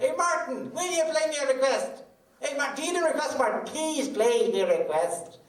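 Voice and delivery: very high, loud, insistent, put-on Irish accent. Retelling a front-row audience member pestering the performer, in mock-insistent Irish accent. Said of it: "I think that's a pretty good Irish accent".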